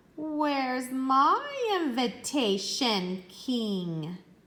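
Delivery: dreadful hissing voice, very slow with swooping pitch. Narrator reading the thirteenth fairy addressing the king from the doorway, in terrible hissing voice. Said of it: "The fairy's terrible voice hissed".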